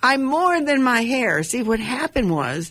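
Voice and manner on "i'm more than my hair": mock sudden high-pitched scream. Retelling hugging a tree after leaving hair stuff at home; retelling a scream. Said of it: "all of a sudden I screamed".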